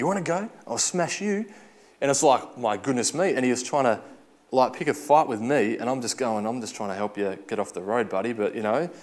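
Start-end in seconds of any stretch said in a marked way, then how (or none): 0.0-1.5 put-on broad, thick, pitched-up Scottish accent. Retelling a man on the road picking a fight, in a thick Scottish accent. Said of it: "talked to me in a thick Scottish accent".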